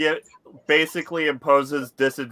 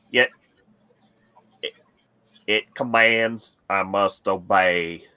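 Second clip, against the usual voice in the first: hypnotised-sounding low, flat monotone drone; 5 semitones lower than usual. Retelling what he said on his turn, imitating a monotone trance voice. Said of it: "in a monotone, like he's in some kind of a trance".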